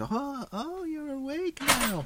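put-on old lady whisper. Retelling a dream where an old lady leans over: imitating an old lady whispering. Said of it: "she whispers over, and she's like".

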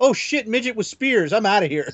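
very high, squeaky deer voice. Describing a comic panel and voicing the deer: voicing the deer. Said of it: "and then the deer goes".

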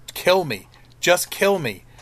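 mock pleading, slow and drawn-out. Retelling a scene where a woman begs a man to kill her, imitating begging. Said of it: "she's begging him to kill me".

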